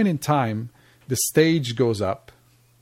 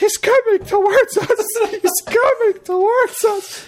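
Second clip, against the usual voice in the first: shrill, very high, panicked shriek; 4 dB louder than usual. Retelling the moment he held his wife's arm as a man approached, retelling screaming like a girl. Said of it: "I start screaming like a girl".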